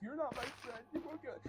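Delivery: very high, whiny, put-on sobbing. Retelling how a classmate who wanted a toy begged, imitating fake crying. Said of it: "all crying and shit like that".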